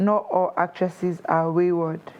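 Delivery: ordinary delivery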